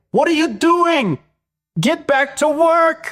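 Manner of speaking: very high, scolding, bossy yelling. Describing a video where Vache plays his boss, imitating Vache yelling. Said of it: "he's like yelling at me".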